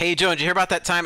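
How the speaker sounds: plain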